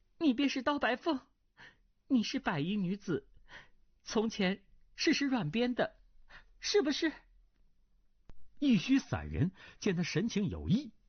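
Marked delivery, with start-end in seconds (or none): 0.2-7.1 high, quavering, trembling, shaken voice. Reading a novel aloud, the narrator voices a character's trembling question to the hermit. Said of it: "穆婉清颤声问".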